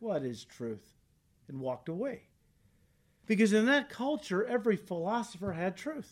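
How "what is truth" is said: cutting, acted sarcastic tone. Retelling Pilate interrogating Jesus: imitating Pilate's sarcastic retort. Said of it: "Pilate sarcastically shot back".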